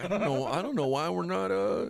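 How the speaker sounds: noncommittal, hesitant dithering. Comparing a co-host to someone: imitating Ben Johnson. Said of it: "You're like Ben Johnson. You're just like".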